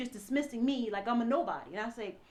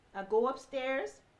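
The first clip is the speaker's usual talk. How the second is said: ordinary talk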